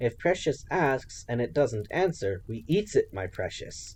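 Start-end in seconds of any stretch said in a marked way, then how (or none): none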